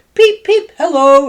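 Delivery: very high-pitched character voice. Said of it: "in [name]'s voice".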